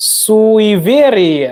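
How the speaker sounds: slow, careful Russian word, syllable by syllable.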